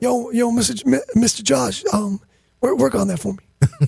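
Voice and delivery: put-on raspy voice. Acting out how a local dude would talk to Mr. Josh, imitating a raspy voice. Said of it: "he's all raspy".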